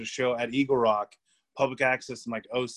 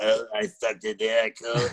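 put-on creature-like old woman voice; 3 semitones lower than usual. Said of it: "it sounds like a be-, like, a creature".

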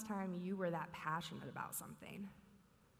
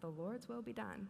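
ordinary talk

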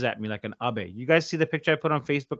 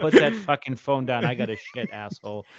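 usual speaking voice

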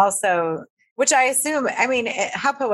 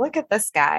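normal talking voice

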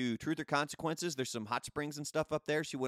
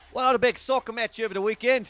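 very loud, high put-on Australian accent; 8 semitones higher, 11 dB louder than usual. Announcing the sports news to listeners, in an Australian accent. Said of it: "I don't know why I went Australian there".

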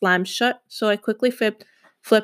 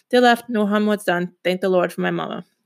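ordinary delivery

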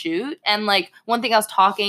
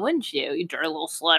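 put-on whisper, quieter; 2 semitones lower, 4 dB quieter than usual. Retelling what a partner whispered in the ear: imitating a whisper. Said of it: "whispers in my ear and she'd be like".

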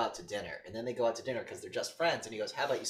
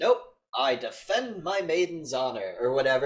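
put-on old king voice, slower; 4 semitones higher, 7 dB louder than usual. Retelling a man turning down a woman's proposition, in an old king voice. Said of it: "he starts talking like an old king".

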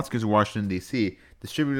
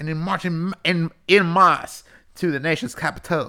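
put-on Southern wrestler voice, much higher and louder; 7 semitones higher, 4 dB louder than usual. Redoing a passage in jest after trying just Southern, now as a Dusty Rhodes impression. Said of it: "let me redo it as Dusty Rhodes".

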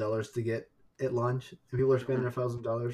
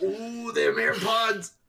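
cartoon prospector voice, much higher; 10 semitones higher, 3 dB louder than usual. Teasing someone seething over their rant, the speaker blurts a line in Yosemite Sam voice. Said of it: "sounding like the prospector from Doody Tunes".

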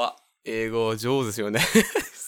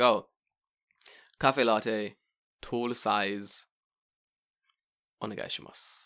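slow, put-on Japanese accent; 2 semitones lower than usual. Retelling ordering coffee at a Starbucks: put-on Japanese accent. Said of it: "you're using Japanese voice".

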